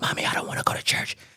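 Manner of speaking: very quiet, secretive whisper, barely voiced. Retelling a call to mother about skipping church: imitating own past whisper. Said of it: "I'm whispering in the house".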